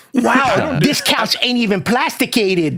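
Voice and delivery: put-on New York street accent. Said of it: "You're doing that street one".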